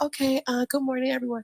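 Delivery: soft-spoken, gentle, careful tone. Retelling how they greeted everyone before being talked over: imitating own soft tone. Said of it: "trying to talk in a soft tone".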